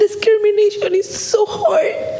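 high, tearful sobbing speech pushed out through tears.

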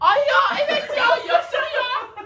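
loud, excited, high-pitched cheering shriek.

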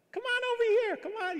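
put-on cooing, very high, fast baby talk. Retelling coaxing a sheep on a farm to come over, in baby talk to a sheep. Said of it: "You start talking like baby talk to animals".

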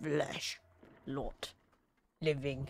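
brooding, slow, halting monster voice, one word at a time. Voicing the flesh kraken during a game: flesh kraken creature voice. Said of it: "I live here and guard the flesh kraken. / Flesh. Lot. Living. / The Kraken needs friends".

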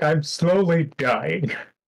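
breathless strained character voice. Voicing Korg stuck smiling: Korg struggling for breath. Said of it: "Korg can't breathe when he's smiling like that".

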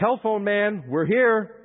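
loud, high-pitched yelled call. Recalling walking into a yard with a pit bull, retelling a yell. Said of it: "yelled out".

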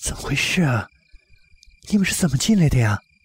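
said timidly. He asks the narrator and his companion in a story read aloud: timid question. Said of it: "怯怯地问".

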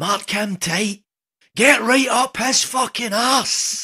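booming, very loud, very slow, shrill drawn-out bellow. Retelling how a youth football manager shouted at a nine-year-old defender: imitating a manager shouting. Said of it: "he'd be shouting".

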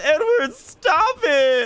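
mock, high, tearful whimpering crying whine. Retelling what an opponent said after being killed in-game, imitating someone crying. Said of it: "he's crying".

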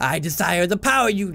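slow, fake American accent, slipping. Voicing a villain who speaks through his mind-controlled slave, in a put-on American accent. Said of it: "I feel like I'm doing a different voice now".

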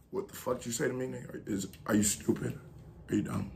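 very low, intimidating, menacing voice. Showing how he talks when he wants someone scared, threatening. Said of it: "If I want you to be scared".

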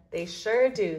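ordinary delivery, nothing marked

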